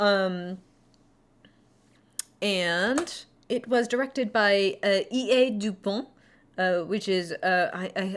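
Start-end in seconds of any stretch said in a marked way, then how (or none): 5.1-6.1 heavy, very French accent. Saying the film director's name aloud: very Frenchy accent. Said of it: "I said it with a very Frenchy accent".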